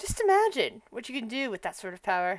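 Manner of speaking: hushed half-whisper, barely a breath. A character leans on Jasper's shoulder and half-whispers to him: half-whispering. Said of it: "it's like whispers over".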